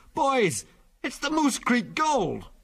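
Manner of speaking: a tone up, very high, animated, swooping, excited. Delaney, having read the torn sacking, calls out to the boys, a tone higher. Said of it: "a tone higher".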